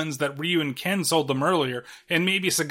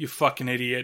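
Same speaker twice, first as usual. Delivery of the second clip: mock scornful tone, lower pitched; 4 semitones lower than usual. Retelling how everyone reacted to a character: imitating a scornful retort. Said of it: "everybody looks at him like".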